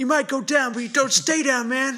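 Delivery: put-on, loud, very high American accent. Delivering a sports-movie style pep line: American accent. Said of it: "What a great American accent".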